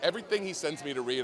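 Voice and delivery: ordinary delivery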